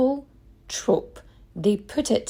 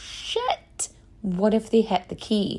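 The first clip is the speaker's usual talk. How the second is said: normal talking voice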